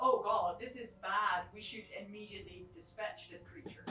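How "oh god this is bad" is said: ordinary delivery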